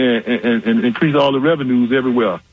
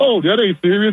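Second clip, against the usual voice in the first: put-on laughing speech, higher pitch; 8 semitones higher than usual. Imitating the press secretary dismissing it: imitating someone laughing while talking. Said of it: "she was just laughing like".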